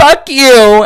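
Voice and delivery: very high, shrill, loud sobbing scream. Retelling how she yelled at the speaker's dad over coffee, imitating scream crying. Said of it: "she was like scream crying".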